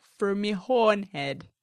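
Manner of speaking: put-on Baltimore accent. Recapping a story and quoting one character, in a Baltimore accent. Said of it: "I did a perfect Baltimore accent".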